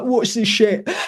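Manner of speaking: put-on British accent. Retelling how begrudging bankers reacted, in a put-on British accent. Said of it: "I don't know why that was a British accent".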